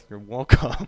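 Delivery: muttering under breath. Speaker acting out holding a door for someone who doesn't say thanks, mumbled under breath. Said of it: "I mumble under my breath".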